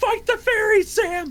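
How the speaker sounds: very high, loud frantic yell. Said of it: "he's yelling at Sam".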